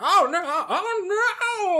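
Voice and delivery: distant panicked shouting. Narrating a scene as the divine lord of science cries out from within, shouting voice. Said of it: "the shouting voice of the divine lord".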